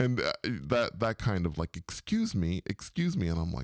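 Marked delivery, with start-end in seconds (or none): 1.8-3.3 firm, stern, authoritative voice. Speaker retells a woman calling out to her, imitating a stern voice. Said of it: "they had a kind of a t- stern voice".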